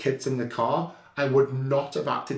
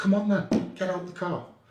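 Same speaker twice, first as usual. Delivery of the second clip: furious, confrontational, angry, pitched-up delivery; 6 semitones higher than usual. Retelling answering a driver who threatened to knock them out: retelling an angry challenge. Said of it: "I was so angry".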